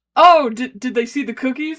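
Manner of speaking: plain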